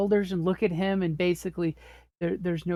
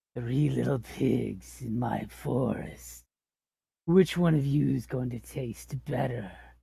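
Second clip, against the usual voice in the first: low, gurgly growl, words blurred through tongue and teeth; 6 semitones lower, 3 dB quieter than usual. Acting out a character speaking to three little pigs, loud gurgly growly voice. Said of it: "loud, gurgly voice that's just, you know, all tongue and teeth blurring out his words, so it's kind of growly".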